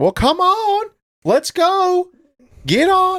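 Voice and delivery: very high, rising, swooping, drawn-out yell. Retelling a woman yelling into her car at her kids: imitating a woman yelling. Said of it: "I hear her yelling into her car".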